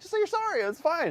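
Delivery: very high-pitched, fed-up, angry, insistent voice. Retelling asking her to apologize: imitating own angry voice. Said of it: "Now I'm really getting mad".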